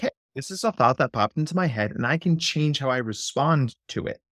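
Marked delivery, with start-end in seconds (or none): none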